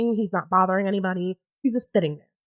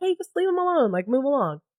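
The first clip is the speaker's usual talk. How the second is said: pitched-up, dismissive half shout; 5 semitones higher than usual. Retelling how a friend across the way reacted: retelling a friend's shout. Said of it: "just kinda shouted at her".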